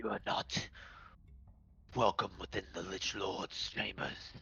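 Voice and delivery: hushed, whispery, breathy demonic voice. The game master voices the Eldritch Flame Skull in a flame-demonic voice. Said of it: "flame demonic sort of sort of uh".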